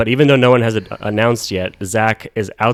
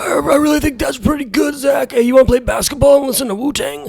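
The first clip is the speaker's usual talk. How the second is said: put-on very high, husky, breaking teenage boy voice. Describing Eric, then mimicking him for the group: Eric impression.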